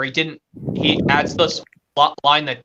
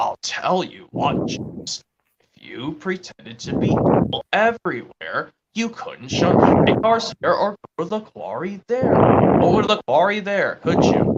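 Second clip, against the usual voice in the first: put-on children's storybook narrator voice; 3 semitones higher than usual. Quoting lines from a narrator to another fan: Michael Angelis impression. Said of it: "when Michael Angelis goes".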